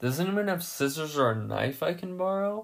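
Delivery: hesitant, uncertain tone. A narrator reads Kane's question to the others, asked uncertainly. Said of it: "Kane asked uncertainly".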